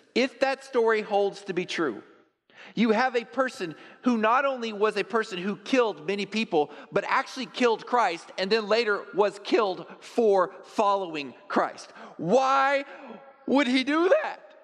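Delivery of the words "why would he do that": voice cracking and breaking, pitched upward. A speaker telling a story about Christ, voice cracking. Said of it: "My voice cracked there".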